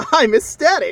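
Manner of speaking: gushing, shrill, booming, very high, very loud enthusiasm. Answering a complaining player who calls this fun: enthusiastic. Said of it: "Why are you so much more enthusiastic".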